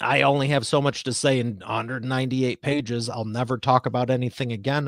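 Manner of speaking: ordinary talk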